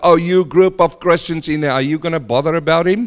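ordinary talk

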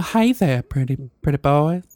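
put-on Southern accent. Asked by a friend to do a woman's voice, in a Southern Belle voice. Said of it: "Southern Belle".

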